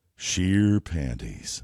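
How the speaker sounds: exaggerated big put-on voice. Playing word association, giving the first answer that comes, as Billy Big Voice. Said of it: "in this voice".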